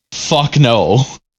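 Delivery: ordinary talk, nothing marked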